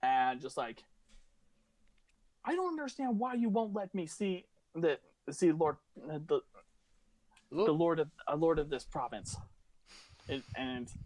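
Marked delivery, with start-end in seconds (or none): 2.4-9.4 extremely angry, furious woman's voice. Voicing an elven woman arguing with a guard: furious elven woman voice. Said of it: "she is pissed as all hell".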